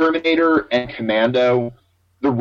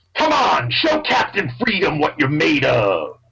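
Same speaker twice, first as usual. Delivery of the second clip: animated, showy voice swinging pitch widely up and down; 4 semitones higher than usual. Showing a pretty good impression from the movie: Jesse Ventura impression. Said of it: "I can do a pretty good impression of Jesse Ventura".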